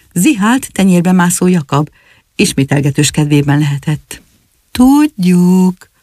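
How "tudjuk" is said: mild, kind, gentle tone. Another Jakab answers the alarm about the dragon, speaking gently. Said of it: "mondta szeliden".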